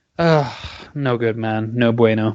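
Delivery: revolted, fed-up, disapproving groan of dismissal. Complaining about a boxer's poor choice of fight: disgusted. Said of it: "you sound so disgusted".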